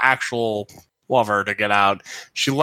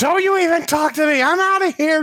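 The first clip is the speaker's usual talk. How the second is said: put-on panicked screaming, higher. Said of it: "Just running".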